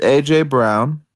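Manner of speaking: slow, careful, deliberate delivery.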